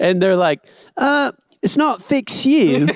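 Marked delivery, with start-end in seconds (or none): 1.0-2.9 put-on British accent, very high and drawn out. Retelling a movie scene, quoting the friends' reply: British accent. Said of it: "in the British accent".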